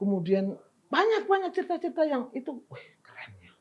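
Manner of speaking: soft, unvoiced whisper.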